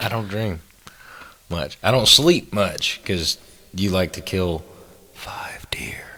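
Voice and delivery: slow, low-key, hushed whisper. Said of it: "Why are we whispering?".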